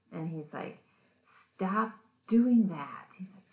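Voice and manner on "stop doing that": shrill, very loud, agitated, furious screaming fit. Retelling a story, the speaker acts out Zach screaming at Billy, imitating Zach screaming angrily. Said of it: "really agitated and angry and starts screaming at Billy".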